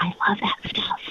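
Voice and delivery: soft, secretive, hushed whisper, breath only. Retelling what new people at church say about the podcast: imitating someone whispering. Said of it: "they'll whisper".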